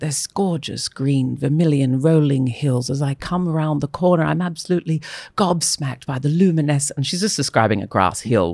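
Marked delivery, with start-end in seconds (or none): 0.0-6.9 put-on British accent. Retelling how Joanna Lumley described green hills: Joanna Lumley impression. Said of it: "I heard Joanna Lumley on her Spice Road Adventure thing".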